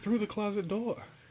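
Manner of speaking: pleasant put-on lady voice. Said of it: "like a woman's voice saying".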